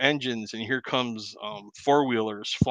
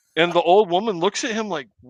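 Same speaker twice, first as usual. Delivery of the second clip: usual speaking voice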